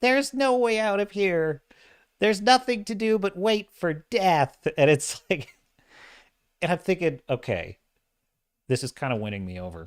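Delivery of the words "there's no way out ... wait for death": cute, adorable, tiny voice pitched up. Describing a scene where a little caged star talks, in an adorable voice. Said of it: "he's got like this adorable voice".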